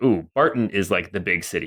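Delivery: normal talking voice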